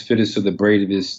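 ordinary talk

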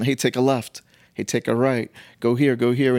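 ordinary delivery

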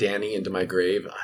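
ordinary talk

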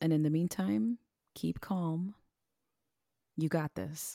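slow, gentle, soothing tone. Signing off an episode to listeners: soothing voice. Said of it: "She says that with her soothing voice".

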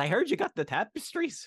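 very high, shrill, fake Scottish brogue. Retelling a movie scene where the hero bluffs his way into a castle: Indiana Jones fake Scottish accent. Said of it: "got the Scottish accents".

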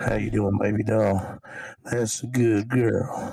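southern drawl, laid on. Showing the voice he slips into: southern drawl Clint Eastwood voice. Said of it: "I get a southern draw, and I sound like Clint Eastwood".

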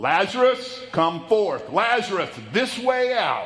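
mock authoritative, loud, commanding call. The speaker retells the bible story of lazarus, retelling a loud commanding call. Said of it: "A commanding voice".

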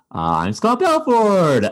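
very high, swooping, sing-song comic inflection. Showing the inflection in his voice without giving away his jokes, do a bad Scott Belford impression. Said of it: "but he does this".

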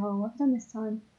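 put-on fond, exasperated tone. Imitating a character's line as fond, not annoyed: imitating a fond, exasperated tone. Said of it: "it's quite a fond".

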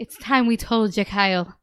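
put-on Irish-accented speech. Recounting a story, the speaker quotes Mom in an Irish accent. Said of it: "You've already begun to do the accent".

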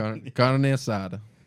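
Italian-sounding pronunciation. Repeating a food name after others: Italian-sounding pronunciation. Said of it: "Why you sound like an Italian?".

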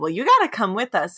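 ordinary talk, nothing marked

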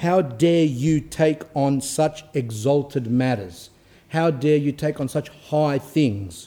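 slow, stern, reproachful tone. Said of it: "he gave me a stern look and said".

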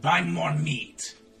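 voiced like a goblin. Voicing a goblin answering a player's greeting: goblin voice. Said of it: "As he suddenly says".

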